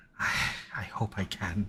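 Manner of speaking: barely audible, very slow whisper under breath. Narrating a scene, a character answers very quietly under his breath. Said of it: "very quietly under his breath".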